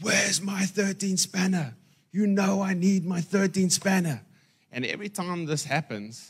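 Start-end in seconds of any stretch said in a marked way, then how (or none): 0.0-4.2 high-pitched screaming woman's voice. Telling a story about a missing 13 spanner, imitating a wife screaming. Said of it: "starts screaming".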